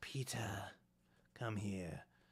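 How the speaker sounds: amused, commanding dark-lord voice. Acting out a scene where the Dark Lord summons Peter: Voldemort voice. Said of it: "he's just like".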